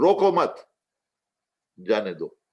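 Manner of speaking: brief stop right after "mat". Showing how phrasing changes meaning, with a pause after mat. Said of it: "You paused at roko mat".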